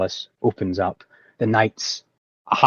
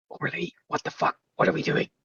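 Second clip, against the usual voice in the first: close-up, breathy, barely voiced, very soft whisper; 7 semitones higher, 7 dB quieter than usual. A player character speaks to a fellow party member in the game: whisper. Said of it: "very close but whisper".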